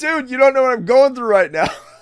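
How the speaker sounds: put-on very high, shrill, loud drunken holler. Retelling yelling at people walking into a bar, retelling a drunk yell. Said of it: "I'm yelling at them, drunk as fuck".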